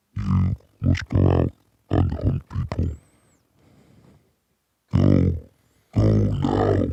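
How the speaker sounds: rough, creaky, very deep inner-voice rumble. The speaker shows what his inner voice sounds like: a put-on inner voice. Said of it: "My my inner voice sounds like this".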